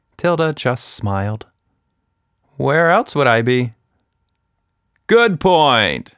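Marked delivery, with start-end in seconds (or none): 5.1-6.0 laughing, said through a laugh, pitched up. Tilda's dad answers her question: laughing. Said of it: "her dad laughed".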